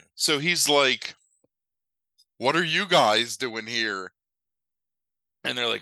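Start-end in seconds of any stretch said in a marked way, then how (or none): 2.4-4.1 put-on, affected judge voice. Retelling a movie scene, quoting the judge: imitating Dom DeLuise's affected judge. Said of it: "he's very affected in the way that he speaks".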